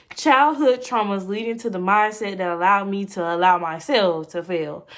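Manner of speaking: ordinary talk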